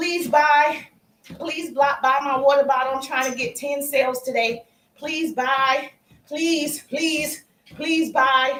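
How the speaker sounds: flat, unenthusiastic tone. Showing how selling sounds with no enthusiasm, flat unenthusiastic begging. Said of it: "There's no enthusiasm".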